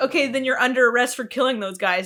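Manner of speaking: ordinary talk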